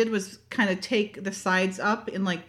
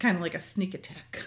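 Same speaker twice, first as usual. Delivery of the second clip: muttered under breath, lower and quieter; 2 semitones lower, 6 dB quieter than usual. Retelling what someone said during a surprise house visit: retelling a mutter under breath. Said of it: "under her breath is like".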